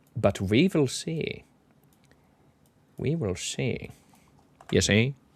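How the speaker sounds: put-on cartoon creature voice. Finishing a chart analysis of market lows, in a Grinch-like voice. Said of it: "You sounded like um the Grinch then".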